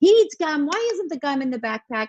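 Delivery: play-acted exasperated shouting, high-pitched and frustrated. Retelling a rushed morning, imitating herself yelling at the kids' dad. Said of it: "yelling, like".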